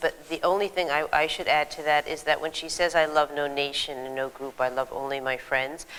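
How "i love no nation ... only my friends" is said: ordinary talk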